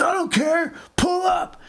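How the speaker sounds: annoyed, angry, very high, slow, drawn out. Retelling what the angry driver answered: imitating an angry driver. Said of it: "This guy sounds angry".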